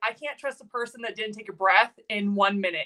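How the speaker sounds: normal talking voice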